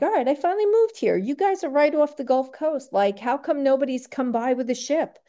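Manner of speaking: loud, high-pitched calling out. Speaker retells standing outside one night calling up to the sky: retelling yelling at the sky. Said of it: "yelling at the sky".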